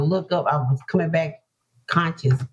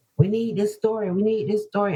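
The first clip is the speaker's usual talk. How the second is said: put-on, half-voiced, mild yelling, repeated; 4 semitones higher than usual. Retelling hearing people at the hospital: imitating people yelling. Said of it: "yelling, screaming".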